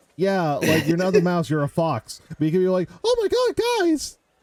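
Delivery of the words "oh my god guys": very high squeaky cartoon voice. Mocking the other speaker for how he sounded earlier, in a Mickey Mouse voice. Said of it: "you sounded like goddamn Mickey Mouse".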